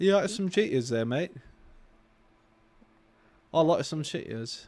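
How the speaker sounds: fake, mock, put-on British accent. Speakers joke about how cheetos sounds in a british accent, mock british accent. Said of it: "That's every Brit ever".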